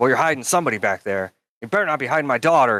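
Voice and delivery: mock, frantic, freaking-out outburst. Retelling a customer's mother confronting the speaker at work: imitating someone freaking out. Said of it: "she came in just freaking out at me".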